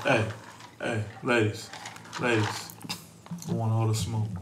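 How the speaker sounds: whispery, breathy, hushed fake smooth-talker voice. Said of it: "Why you putting on that voice".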